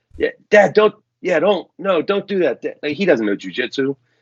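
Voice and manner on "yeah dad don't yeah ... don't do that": high-pitched shouting. Retelling a first competition, imitating Carlo yelling from the crowd.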